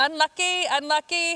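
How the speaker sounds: put-on Scottish-accented cheering voice. Recalling a boy's mom cheering from the stands: scottish accent. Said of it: "in her really beautiful Scottish accent".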